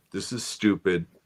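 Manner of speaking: plain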